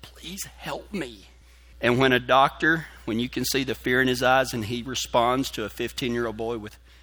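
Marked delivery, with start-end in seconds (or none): 0.0-1.2 feeble, barely-there, very weak, very quiet hushed voice. Recounting pleading with a doctor as a dying 15-year-old, retelling a very weak voice. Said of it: "I'm in a very weak voice".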